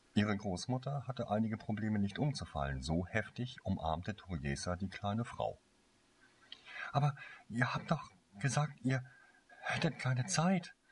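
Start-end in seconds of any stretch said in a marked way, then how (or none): 7.0-10.8 high, halting, stumbling stammering words. A girl speaks to her grandparents right after hugging them, stammering. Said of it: "stammelte sie".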